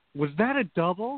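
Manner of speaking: very loud, high-pitched blurted words. Retelling what a woman next to her in class blurted, retelling a very loud question. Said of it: "she very loudly went".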